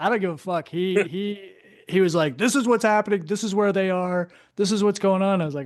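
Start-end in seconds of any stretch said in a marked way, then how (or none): 2.4-5.4 half-yelled, mildly yelling delivery. Retelling how Hodges took charge, imitating Hodges yelling. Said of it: "Hodges is yelling, like just yelling".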